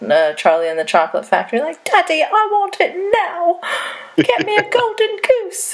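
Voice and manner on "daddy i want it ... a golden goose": very high spoiled-brat voice. Joking about a video's spoiled rich kid vibes: Veruca Salt voice. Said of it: "Veruca Salt vibes".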